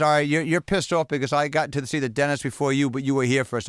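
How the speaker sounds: ordinary delivery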